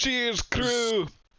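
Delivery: put-on high voice slipping accidentally into Scottish accent. Toasting the crew in character, slipping into a Scottish accent. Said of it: "I'm Scottish now!".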